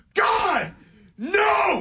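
very high, swooping, frantic, unhinged screaming. Retelling a huge pizza order, imitating the chef in the back screaming. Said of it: "He's screaming".

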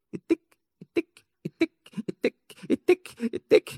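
very high, pinging, dripping-tap vocal tic.

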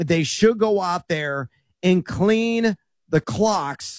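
said slowly, carefully and deliberately.

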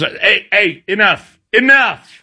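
acted-out shout. Retelling how he hushed noisy kids as a substitute teacher, retelling a shout to shoo a bear. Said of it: "sounded like you were shooing away a bear".

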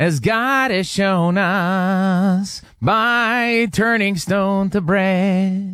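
put-on high-pitched old man voice with us drawn out. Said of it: "Can I give you an impression of an old guy?".

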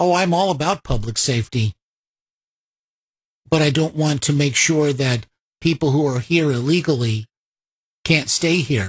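ordinary talk

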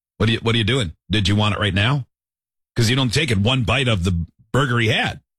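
ordinary talk, nothing marked

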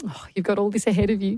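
ordinary talk

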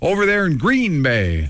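slow, high-pitched commercial voiceover announcer read. Imitating an out-of-town voiceover in commercials: imitating an out-of-town commercial voiceover. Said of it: "a voiceover guy that does it from out of town".

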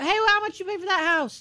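high mock yell, from the side. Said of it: "she just yelled from the side".

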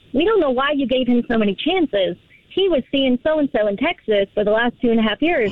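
plain

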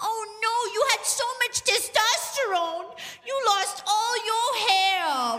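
mock-sympathetic coo, high and slow.

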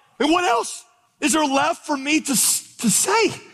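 exasperated, bewildered tone.

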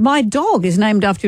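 ordinary delivery

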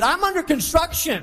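forceful, meant delivery. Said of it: "Come on, say it like you mean it".

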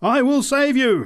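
very high, shrill, full-lunged shouting. Narrator voices a preacher calling out to the narrator, at the top of her voice. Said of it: "she promised me at the top of her voice".

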